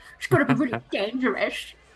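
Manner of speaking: mocking, exact copy of a male voice. Retelling how someone mocked Reikos in his voice: mocking imitation of Reikos. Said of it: "and it's mocking too".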